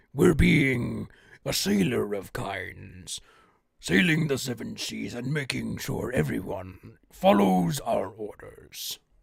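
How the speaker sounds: rough, creaky, low, gravelly sailor-captain voice. Demonstrating a sailor character giving orders, attempting a low gravelly voice. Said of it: "I can't exactly do a really low gravelly voice".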